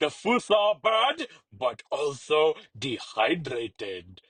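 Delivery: pompous royal character voice. King Julian speaks from his royal throne; King Julian voice. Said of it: "King Julian reclined on his royal throne".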